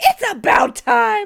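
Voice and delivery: high, loud, excited cheering. Retelling watching a long film to its end: retelling a loud cheer. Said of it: "I cheered out loud".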